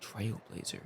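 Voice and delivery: soft, voiceless, mysterious whisper.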